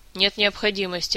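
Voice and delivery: ordinary delivery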